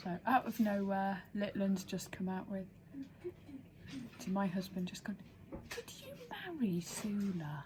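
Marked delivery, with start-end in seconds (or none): 5.7-7.6 sudden, disbelieving, swooping tone, one word drawn out. Retelling a sudden question out of nowhere: imitating Litland's incredulous voice. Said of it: "In that kind of incredulous voice".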